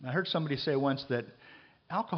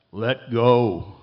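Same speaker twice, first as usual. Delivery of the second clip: very loud, booming, resounding voice; 13 dB louder than usual. Retelling a joke, voicing the answer the fallen man hears, booming voice. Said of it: "He hears this booming voice come back".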